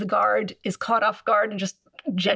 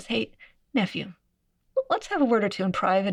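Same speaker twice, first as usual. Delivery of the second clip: slightly lowered, private-sounding voice. Narrating Mithridates speaking to his nephew between two armies, lowered voice. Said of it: "lowers his voice a bit and says".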